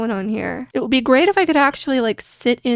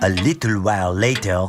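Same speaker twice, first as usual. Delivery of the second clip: very low put-on French narrator accent. Playing a game and skipping ahead, announcing it in a French-accented male narrator voice. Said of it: "[FRENCH ACCENTED MALE NARRATOR VOICE]".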